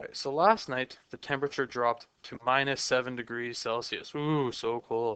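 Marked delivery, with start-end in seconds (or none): 4.1-5.2 dry, sarcastic, much slower. Explaining a temperature conversion example about minus seven Celsius; sarcastic. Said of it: "That was sarcasm".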